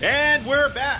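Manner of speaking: very high, shrill, shouted yell. Host coming back from a break on the show, yelling. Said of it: "why are you yelling?".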